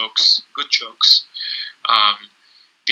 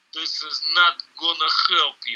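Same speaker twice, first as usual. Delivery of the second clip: put-on Russian-accented English, pitched up; 5 semitones higher than usual. Quoting a man who gave a very tough fight, in a russian accent. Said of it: "he's like with a Russian accent".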